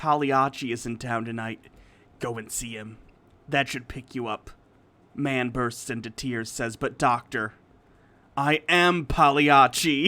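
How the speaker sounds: put-on gruff vigilante voice. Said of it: "I gotta do my Rorschach voice".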